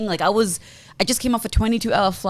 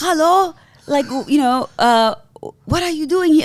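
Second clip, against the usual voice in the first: bad put-on German accent, pitched up; 7 semitones higher than usual. Retelling a friendly airport security guard greeting them, in a failed German accent. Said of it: "I can't do the accent".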